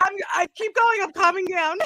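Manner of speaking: very loud, high-pitched talking through laughter. Answering a co-speaker who asks how you are still laughing, still laughing while talking. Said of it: "How are you still laughing?".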